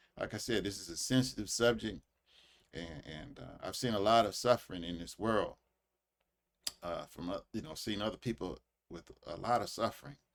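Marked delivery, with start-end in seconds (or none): 0.2-7.1 choked-up voice catching with emotion. Discussing a sensitive subject, speaker keeps talking while choking up. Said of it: "I'm choking up".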